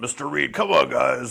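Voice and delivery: put-on big guy character voice. Showing the first voice tried for a character, Mister Reed big-guy voice. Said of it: "I had this kind of voice like this".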